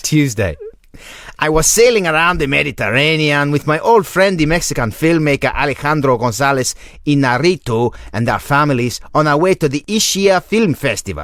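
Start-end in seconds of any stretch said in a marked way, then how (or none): 1.4-11.2 grotesque, over-the-top caricature Mexican accent, pitched up. Asked to read Alfonso Cuarón's words aloud: grotesque Alfonso Cuarón caricature. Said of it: "the grotesque caricature".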